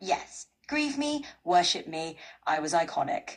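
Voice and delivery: mock showy, self-adoring, proud, strutting grand tone. Imagining what she would have said, strutting around: imitating Patty strutting proudly. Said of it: "She would have strutted around like".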